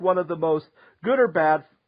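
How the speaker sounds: ordinary talk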